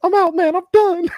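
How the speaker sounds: shrill, very high-pitched voice. Retelling Vontae's answer to a man in the locker room, in Vontae's high-pitched voice. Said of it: "He said Vontae had like a high pitched voice".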